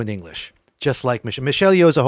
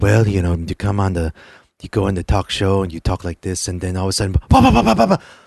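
put-on Hong Kong accent, lower pitch; 5 semitones lower than usual. Showing how a Jackie Chan impression goes on a talk show: Jackie Chan impression. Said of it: "my Jackie Chan impression".

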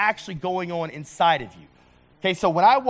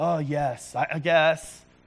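grudging, reluctant, long-suffering, put-upon tone; 2 semitones lower, 3 dB quieter than usual. Showing how to answer her request so she feels guilty: mock-reluctant, put-upon. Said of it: "or I can say it in a way that makes her feel really guilty about asking me to do these things".

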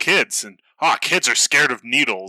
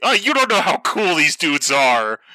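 put-on high, spirited mild yell, held small; 5 semitones higher than usual. Speaker describes a hero shouting at the devil, imitating Asta screaming. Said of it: "with Asta screaming like".

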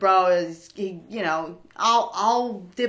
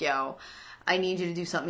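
put-on pleading tone, quieter; 7 dB quieter than usual. Retelling a scene from an episode: imitating someone begging. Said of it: "he's begging Jimmy".

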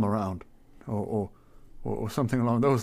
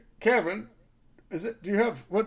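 shouting, higher pitch; 10 semitones higher than usual. A man pushes open the back door and calls into the back, shouting to the back room. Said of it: "kind of shouting to the back like".

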